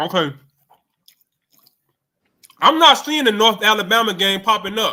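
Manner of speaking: speaking with mouth full of food. Talking to the audience while eating on air, talking while eating. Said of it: "Sorry if I'm eating in front of y'all guys' face".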